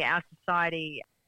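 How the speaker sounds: ordinary talk, nothing marked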